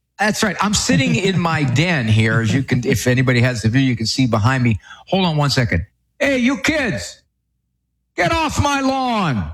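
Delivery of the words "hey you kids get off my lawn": very high, swooping, put-on old man voice. Speaker in his den on camera, breaking off for a bit: old man voice. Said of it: "I had to just do my old man thing".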